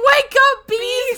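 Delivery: put-on very high, loud, tearful crying plea. Retelling a girl pleading with bees to wake up, imitating Betty crying. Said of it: "And she's crying".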